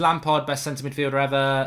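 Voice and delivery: ordinary talk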